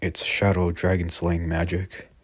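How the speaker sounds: ordinary talk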